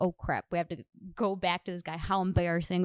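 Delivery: ordinary delivery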